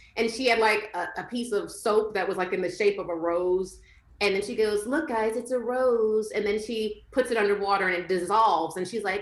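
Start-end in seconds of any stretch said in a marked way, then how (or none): 4.9-6.3 put-on babyish talk, slow. Describing a woman in a video who talks in a baby voice, imitating her baby voice. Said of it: "she like speaks in like a baby voice".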